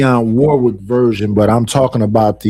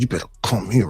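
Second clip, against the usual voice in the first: mock aggressive female voice, quieter; 3 semitones lower, 9 dB quieter than usual. Retelling what a woman in her car said, imitating an aggressive woman. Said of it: "She was very aggressive talking in that car".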